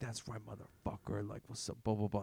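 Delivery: very quiet, muttered mumbling under the breath. Retelling how a guy with a cart followed the speaker, imitating a guy mumbling. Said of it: "he's like mumbling".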